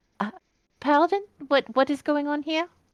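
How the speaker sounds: bewildered, high put-on voice. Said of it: "Charlotte is confused as well".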